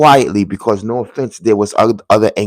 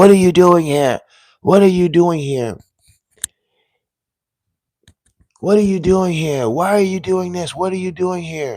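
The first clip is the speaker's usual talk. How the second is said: mock high voices yelling accusingly, over and over; 8 semitones higher than usual. Recounting people who yelled at the speaker, retelling their yelling. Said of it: "They were yelling at me".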